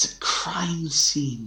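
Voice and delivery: high-pitched, stage-whispered aside. Narrating a scene where a woman looks at the player's character: whispering. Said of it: "She just looks at you and whispers like".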